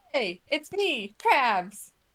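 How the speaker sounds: slow, drawn-out cartoon voice, every word stretched. Knocking on a door in a game, pretending to be Krabs: imitating Krabs. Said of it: "trying to imitate Krabs".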